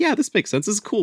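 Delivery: high, impressed inner-voice delivery.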